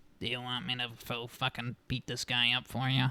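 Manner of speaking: droning, flat, monotone robot-like voice. Quoting the speaker's very old great aunt, imitating her robot-like voice. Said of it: "she sounds like a robot".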